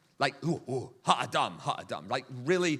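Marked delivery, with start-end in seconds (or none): 0.5-2.1 crude, unrefined, simple, primitive caveman voice. Acting out Esau coming in and asking for the stew: caveman-like Esau voice. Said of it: "this guy's hardly refined at all".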